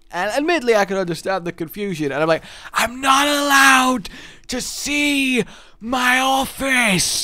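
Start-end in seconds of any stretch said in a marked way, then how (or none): 2.7-7.2 very slow, forceful, aggressive, high-pitched loud whisper. Retelling a confusing exchange with other people, retelling an aggressive shout-whisper. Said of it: "the shouspers sound quite aggressive".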